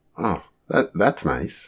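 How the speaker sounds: soft, casual, unbothered, nonchalant. Hearing that a woman sent her hello, the speaker answers, nonchalant. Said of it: "Marty said nonchalantly".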